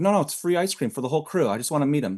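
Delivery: plain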